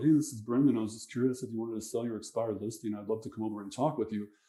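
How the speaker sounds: dull, unenthusiastic, soft, rushed, boring delivery. Demonstrating how a caller who sucks sounds on a sales call, boring delivery. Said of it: "you suck ... you're boring".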